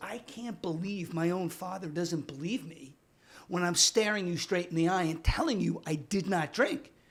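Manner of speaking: cutting, vicious, hard tone. Retelling how a son denied drinking to his father: imitating a vicious retort. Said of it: "with this vicious stare and goes".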